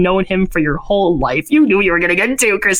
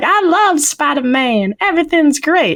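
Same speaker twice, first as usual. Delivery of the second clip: put-on high, chirpy small child voice; 8 semitones higher than usual. Recapping a movie scene: imitating little kids. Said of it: "these two little kids are like".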